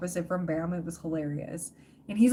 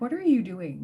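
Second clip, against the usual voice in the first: put-on cat voice, awkward. Voicing the street cat sitting there during selfies: voicing the cat, put-on awkward. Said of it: "sitting there awkwardly going".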